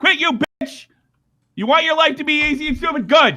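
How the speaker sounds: angry, heated tirade. Arguing with someone who refuses to be yelled at, yelling angrily. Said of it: "I'm yelling at you all I want".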